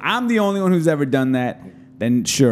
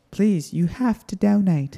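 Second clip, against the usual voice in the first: put-on high-pitched British accent of a little boy; 7 semitones higher than usual. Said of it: "I don't know why he's British".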